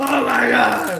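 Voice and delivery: high, loud scream.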